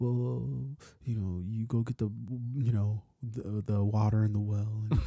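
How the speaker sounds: put-on soft mumbling preacher voice. Describing someone's preacher character, doing how he talks in a soft mumbling preacher voice. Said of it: "He only talks like this".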